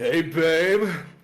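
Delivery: put-on 1960s greaser voice. Voicing the kelpie sliding over to Dyer to flirt: 1960s greaser voice. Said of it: "He slides over to Dyer".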